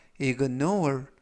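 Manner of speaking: ignore with the -nore syllable stressed. Korean English vocabulary lesson on ignore, stress on second syllable nore. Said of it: "이때 강세는 뒷부분에 있는 알파벳 O에 강세가 있습니다".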